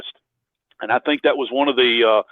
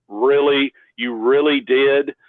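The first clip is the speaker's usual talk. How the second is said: heavy, acted sarcasm in a slow drawl. Retelling what a guy at a meetup said back: imitating a sarcastic reply. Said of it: "Just real sarcastically".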